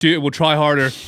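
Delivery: put-on American accent coming in suddenly, out of nowhere. Telling a teammate in a game to try harder: american accent. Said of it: "I've got an American accent for no reason too".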